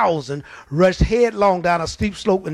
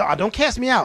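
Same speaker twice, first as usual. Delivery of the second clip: mock begging, beseeching, pleading devil voice; 4 semitones higher than usual. Retelling the devil asking not to be cast out: imitating the devil begging. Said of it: "the devil's begging".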